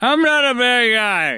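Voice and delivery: slow, dragged, put-on drunk-guy voice. Reading someone's quote aloud about Oprah Winfrey: put-on drunk voice. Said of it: "I'm gonna do it in my best drunk voice".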